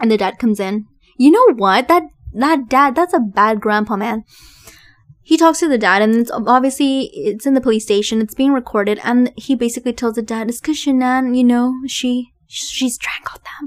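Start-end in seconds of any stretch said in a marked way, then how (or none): 10.5-13.7 confiding tone, halting on the word "she". Retelling what a man told his father in the police station: imitating someone speaking low. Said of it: "Like, kind of in a low voice".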